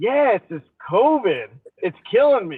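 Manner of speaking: swooping, sarcastic, wisecracking tone. Retelling a joking reply to an old passenger on a plane: retelling own sarcastic remark. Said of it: "so just to be sarcastic".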